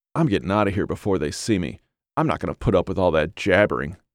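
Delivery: ordinary delivery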